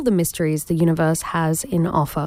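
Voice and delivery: ordinary delivery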